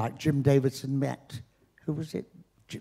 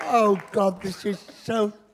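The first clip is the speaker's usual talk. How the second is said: still crying while talking, tearful, higher pitched; 7 semitones higher than usual. Accepting an award after a tribute speech, tearful, still crying. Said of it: "I'm still crying".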